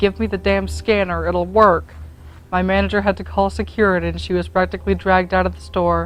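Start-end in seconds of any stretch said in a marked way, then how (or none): none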